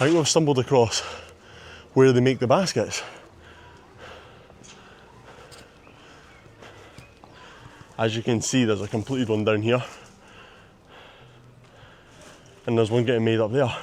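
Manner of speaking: short of breath, breathless. After walking up a hill, speaking out of breath. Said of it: "forgive me being out of breath".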